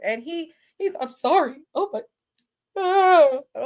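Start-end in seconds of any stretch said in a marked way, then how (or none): 1.0-2.0 mock crying in a man's voice. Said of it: "But he is crying".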